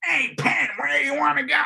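very high, shouted voice impression.

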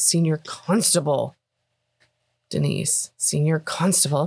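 slow, disgruntled, grumbling voice. Retelling a man correcting a woman on his title: imitating someone grumbling. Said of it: "he kind of grumbles at her and goes".

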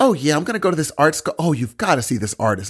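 put-on, affected, camped-up voice.

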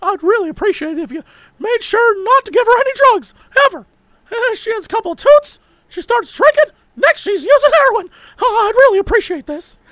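very high, cartoon-style voice. Acting out a quote from trial confessions: Mickey Mouse voice. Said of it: "the Mickey Mouse voice makes it weirdly scarier".

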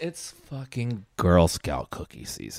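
slow radio announcer voice.

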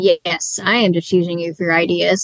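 ordinary delivery

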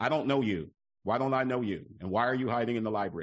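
big, deep-voiced baritone. Retelling what a man said on finding the speaker hiding in the library, in a big booming baritone voice. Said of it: "in this big booming baritone voice of his".

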